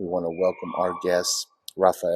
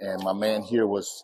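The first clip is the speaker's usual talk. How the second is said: normal talking voice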